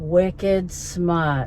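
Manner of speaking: natural, casual, everyday Boston accent. Answering a listener who thinks they sound Boston, in a Boston accent. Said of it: "said in my very best everyday Boston accent to you".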